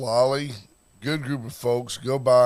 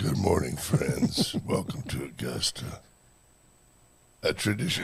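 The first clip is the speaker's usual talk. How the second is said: put-on drunk announcer voice, much lower; 7 semitones lower, 5 dB quieter than usual. Asking the others to imagine him drinking like Pat Summerall, drunk Jim Nantz impression. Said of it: "if Jim Nance drank like Pat Summerall?".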